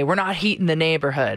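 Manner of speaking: ordinary delivery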